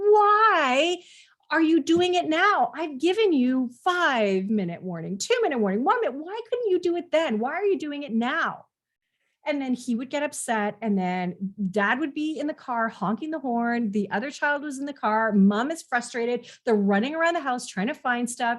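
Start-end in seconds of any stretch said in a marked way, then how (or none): 0.0-8.7 put-on fed-up scolding, pitched up, long drawn-out why. Retelling what a frustrated mom says to her son, imitating an eye-rolling exasperated mom. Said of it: "she would just roll her eyes and just say".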